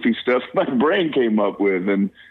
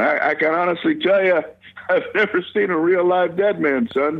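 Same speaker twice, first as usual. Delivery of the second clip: talking through laughter, pitched-up; 8 semitones higher than usual. Recalling his dad answering his question in the car, retelling him laughing while speaking. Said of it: "pounding the steering wheel, laughing, going".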